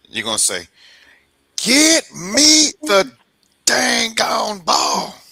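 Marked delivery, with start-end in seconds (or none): 1.6-5.1 very high, very slow, loud, drawn-out swooping sing-song. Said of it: "do a Keyshawn".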